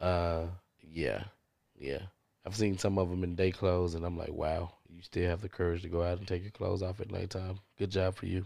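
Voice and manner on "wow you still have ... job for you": acted sarcastic praising tone, quieter. Retelling what was said to former strippers: retelling sarcastic praise. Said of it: "hundred percent sarcastic clap".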